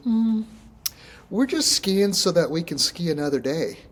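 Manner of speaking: put-on high older woman's voice. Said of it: "She goes".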